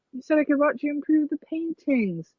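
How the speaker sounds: put-on British accent. Saying a line about watching the paintings, in a british accent. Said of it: "Where did that accent come from?".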